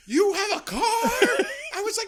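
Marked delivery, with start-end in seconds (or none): 0.1-0.8 very loud, very high, shrill screaming. Retelling screaming at a man who got into a car: imitating own screaming. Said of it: "I just started screaming at him".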